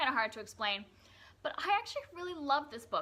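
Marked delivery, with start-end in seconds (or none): 1.4-3.0 surprised, higher-pitched, caught off guard. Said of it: "I'm sorry that I sound surprised".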